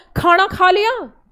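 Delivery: loud, sharp, harsher voice.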